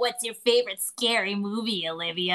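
teasing, taunting tone. Retelling a teasing Ghostface line from a movie scene: imitating Emma Roberts teasing. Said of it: "when she's teasing around, she's like".

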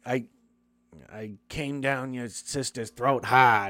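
awful, badly done Boston accent. Retelling a movie scene, the speaker quotes Steve-O running his mouth, in a bad Boston accent. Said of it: "With a bad Boston accent".

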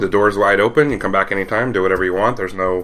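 ordinary delivery

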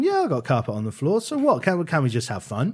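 put-on sarcastic tone. Retelling a YouTuber's reply to complaints, imitating someone being sarcastic. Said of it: "but in a sarcastic way".

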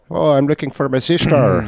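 put-on little old lady voice. Mocking how a big, strong woman character talks, in Brienne of Tarth's strange little accent. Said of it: "this strange little accent".

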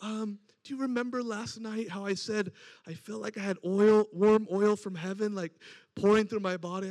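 mock embarrassed, sheepish, bashful voice. Retelling what a healed woman asked the next morning: imitating a sheepish voice. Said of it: "sheepish voice almost".

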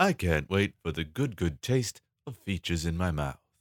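soft, robotic, machine-like delivery. On a podcast, playing the features robot, in a robot voice. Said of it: "That was the features robot".

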